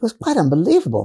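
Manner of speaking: easy, put-on British accent. Recounting the late Olivia speaking to them after her passing: imitating Olivia's British accent. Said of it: "speaking to me with this British accent".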